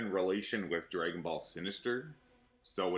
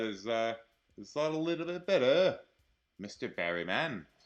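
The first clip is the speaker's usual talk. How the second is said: poorly done, put-on British accent; 4 semitones higher, 3 dB louder than usual. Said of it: "I don't have a very good British accent".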